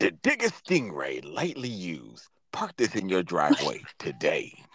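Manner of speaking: very deep, swooping movie trailer announcer voice. Delivering an ad slogan, in a movie announcer voice. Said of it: "Sound like a goddamn movie announcer".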